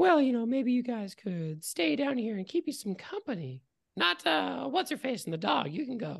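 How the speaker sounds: very high, light, breezy, carefree, unbothered voice. As the figure addressing the group, letting some of them go: very light, carefree voice. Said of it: "says in a very light, carefree voice".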